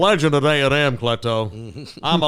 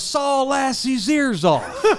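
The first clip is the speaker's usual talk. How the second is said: very slow, pitched-up, drawn-out, wild celebratory hollering; 10 semitones higher than usual. Retelling own call after a walk-off home run: imitating own crazy yelling. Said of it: "We're going crazy".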